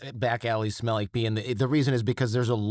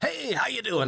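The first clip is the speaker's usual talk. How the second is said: overly energetic, pitched-up, excessively enthusiastic delivery; 12 semitones higher than usual. Retelling meeting Regis Philbin at the next urinal, the speaker does an overly energetic Regis Philbin impression. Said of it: "Like overly energetic".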